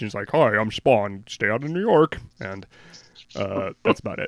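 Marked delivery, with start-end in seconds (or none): 0.3-2.2 tough middle-aged gangster voice. Describing a comic page, doing a Spawn impression. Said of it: "could you do your Spawn impression one more time".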